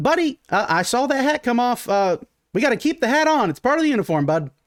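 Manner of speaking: shrill, very high, loud piping little gnome voice. Retelling a gnome telling someone to keep his hat on, piping gnome voice. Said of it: "you hear this gnome kind of pipe and go".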